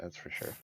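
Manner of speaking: very quiet, barely audible under-the-breath mutter. Speaking as a character in a game, muttering under the breath. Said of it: "I just kinda say under my breath".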